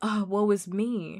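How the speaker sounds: very slow, drawn-out, wallowing self-pitying tone. Retelling how Bear reacts when offended: imitating Bear's mock self-pity. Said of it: "he does it in that way where it's like".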